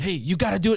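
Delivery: high-energy pump-up tone. Describing how coaches talk to clients, the speaker acts one out: imitating a hyped-up coach. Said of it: "because you're bringing all this energy again".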